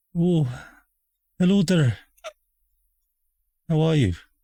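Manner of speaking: put-on fake Irish accent. Voicing someone's greeting, putting the Irish accent back on. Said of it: "put his Irish accent back on".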